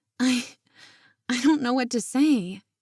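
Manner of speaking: trembling, faltering, unsteady voice. Reading a story, Marina answering an elder's advice: shaking voice. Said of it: "her voice shook".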